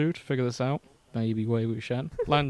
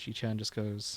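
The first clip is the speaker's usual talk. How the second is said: normal talking voice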